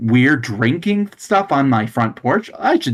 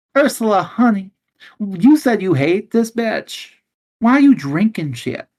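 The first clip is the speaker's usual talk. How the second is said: put-on flamboyant German judge voice, pitched higher; 8 semitones higher than usual. Playing a judge questioning a woman in a dispute: playing a flamboyant German judge. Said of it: "this is me, the, the openly flamboyant German judge".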